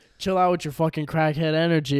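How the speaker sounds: normal talking voice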